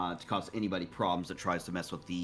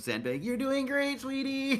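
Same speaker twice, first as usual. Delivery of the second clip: very high, drawn-out, swooping crowd cheer; 4 dB louder than usual. Calling encouragement to Zenbei as the crowd: imitating a cheering crowd. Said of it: "hear it from the crowd, like".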